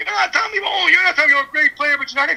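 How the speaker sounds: high-pitched yelling out. Retelling a woman at a guitar clinic yelling from the crowd: imitating someone yelling. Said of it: "yelling in the crowd".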